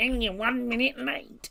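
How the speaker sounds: put-on very high, slow, cranky old man grumble. Mocking complaints about being one minute late: angry old man voice. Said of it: "I sound like an angry old man saying it".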